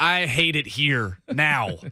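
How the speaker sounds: very slow, drawn-out put-on bitterness, dripping vitriol. Joking about another speaker's doubled green texts: mock vitriol. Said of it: "I hope you hear the vitriol in my voice".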